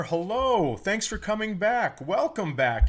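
upbeat, peppy, high-pitched voice. Host welcomes listeners back while his partner across from him is grumpy: peppy voice. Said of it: "a little pep in my voice today".

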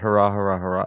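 deadpan, flat, unexcited cheering. Speaker giving three hurrahs after hearing the last one was flat: flat hurrahs. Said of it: "I don't do excitement very well".

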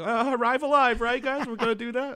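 frantic, urgent tone, voice very high. Showing how the friend-warning sounds in a close call: frantic. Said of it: "it's more frantic than it's like".

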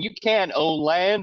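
mock screaming cartoon lion voice, high. Retelling a scene where a lion screams about land: imitating a screaming Futurama lion. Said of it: "he's screaming up and going".

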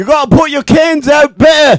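put-on very high, loud Manchester accent. Voicing a garbage man character from Manchester, England, in the Manchester Garbage Man voice. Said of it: "his name's Manchester Garbage Man".

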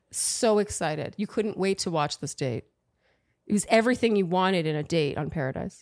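low, sarcastic voice. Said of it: "Are you being sarcastic or serious?".

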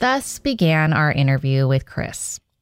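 disapproving, judging, judgmental tone. After a question to chris, remark on how the interview began, in a judgmental tone of voice. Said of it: "your judgmental tone of voice".

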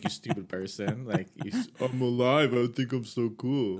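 slow, mocking, taunting smart-ass ghost voice. Acting out a smart-ass ghost that makes fun of everything: mocking smart-ass ghost voice. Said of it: "it just makes fun of everything".

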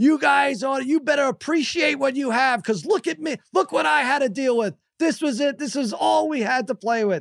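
acted, high-pitched yelling. Retelling scolding the kids about old games: retelling yelling at kids. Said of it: "And now I'm yelling at them".

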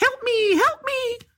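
teasing little fly voice, very high, slow, pleading. Retelling how the mother mocked complaining with the fly line. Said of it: "Making fun of you?".

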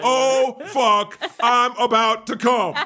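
each word called out with care, high game-show yell. Advising a listener about her guy, yelling like a Wheel of Fortune contestant. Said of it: "he yells it like a Wheel of Fortune contestant".

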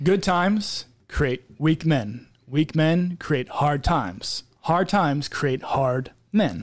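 slow, deliberate delivery, every word carefully enunciated. Asked to say it again, repeating a saying for the group: slow and enunciated. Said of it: "Let me say it slow".

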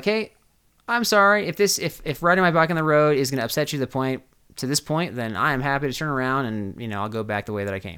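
ordinary talk, nothing marked

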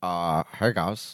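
put-on celebrity voice, soft and hushed. Repeating the impression when asked again: Pete Davidson impression. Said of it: "Do it again".

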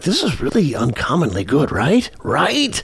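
awed, hushed stage whisper. Speaker recalls watching a great movie mid-way through, retelling a half-whisper. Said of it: "you're kind of whispering like".

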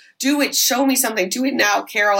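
normal talking voice

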